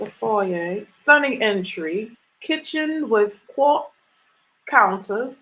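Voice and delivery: slow put-on British accent. Reading a house listing aloud to Facebook viewers, put-on British accent. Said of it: "I hope you like my accent as I read this".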